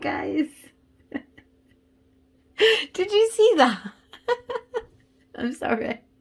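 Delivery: talking through laughter. Reacting to a tarot card that came up during a reading, laughing while talking. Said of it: "I'm just laughing because".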